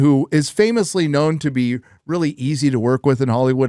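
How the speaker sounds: normal talking voice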